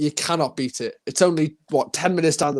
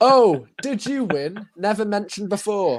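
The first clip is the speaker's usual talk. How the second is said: put-on sarcastic jab, pitched up; 6 semitones higher than usual. Reading aloud a viewer comment from mother: reading out a sarcastic comment. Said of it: "a bit of a sarcastic comment".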